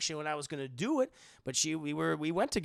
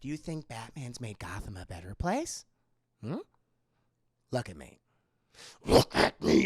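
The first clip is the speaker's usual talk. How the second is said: low, devilish, demonic voice; 5 semitones lower, 4 dB louder than usual. Retelling a movie scene, imitating a demonic voice. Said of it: "his voice sounds so fucking demonic".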